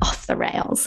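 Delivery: wry, sarcastic whisper. Describing a period of eating whatever she wanted while travelling: said sarcastically. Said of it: "I kind of say that sarcastically".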